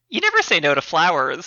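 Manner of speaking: ordinary delivery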